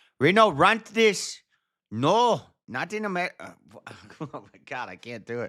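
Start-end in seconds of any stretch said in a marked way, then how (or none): 0.2-3.6 bad, very high, loud put-on Chinese accent. Voicing Chinese people in a video who oppose Antifa, in a bad Chinese accent. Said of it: "let me do a Chinese accent".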